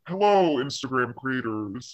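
high, lofty voice. Acting out a floating head greeting the creators: Mark Zuckerberg impression. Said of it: "he's like".

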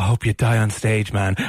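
low fake whisper. Retelling what Danny whispers during a hug: imitating Danny whispering. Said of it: "He just whispers in your ear".

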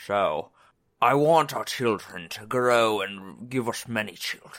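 bad, fumbling attempt at a Scottish accent. Channelling your inner Sean Connery and showing off your Scottish accent, do a bad Sean Connery Scottish accent. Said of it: "That's that's my Scottish accent".

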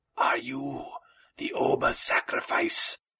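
serpentine, hissing dragon voice. Narrator voicing a dragon addressing Oludara, hissing dragon voice. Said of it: "The dragon spoke in a hissing voice".

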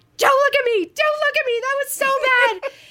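very high, weeping and sobbing through the words. Retelling breaking down in the green room as her husband runs in, retelling her own sobbing. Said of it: "I'm sobbing and shaking".

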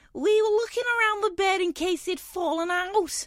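put-on Scouse Liverpool accent, pitched very high. Speaker tries out a Liverpool accent on the others: Liverpool accent. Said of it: "Should I define a Liverpool accent?".

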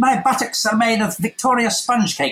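mock manic, unhinged, shrill high shouting. Speaker personifying political correctness as a madman in a straitjacket, manic shrill shouting. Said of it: "shouting in a manic, shrill voice".

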